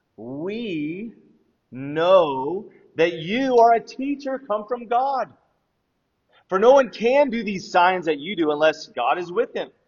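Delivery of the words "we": emphasizing 'we'. Reading Nicodemus's words to Jesus from John chapter 3 to listeners, stress on 'we'. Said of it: "emphasis on that".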